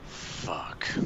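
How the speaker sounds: soft, whispered deep sigh.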